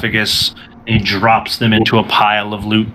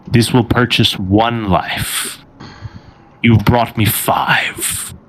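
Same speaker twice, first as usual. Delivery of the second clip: imposing, slow, commanding delivery. Voicing the mummy demanding payment from the group: commanding chamber-shaking voice. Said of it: "he speaks to the lot of you again in this, this voice, which seems commanding in an effort to shake the chamber".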